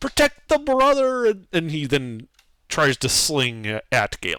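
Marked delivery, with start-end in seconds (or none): 0.0-1.3 very high-pitched, outraged yell. Voicing a kobold yelling to its allies: outraged yell. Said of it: "yell out in, in almost like an outrage".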